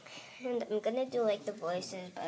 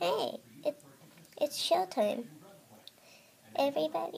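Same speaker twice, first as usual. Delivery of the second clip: high-pitched cartoon red panda mascot voice; 6 semitones higher, 4 dB louder than usual. Doing the voices for toy animals, starting with the red panda: Pandy the red panda voice. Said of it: "So let's get on with the voice".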